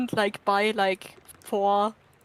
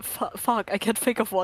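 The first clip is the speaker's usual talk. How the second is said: put-on stuttering, panicked and hurried. Retelling how another player panicked when asked to name an animal, imitating panicked stuttering. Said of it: "He just started panicking, like stuttering".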